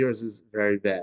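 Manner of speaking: ordinary delivery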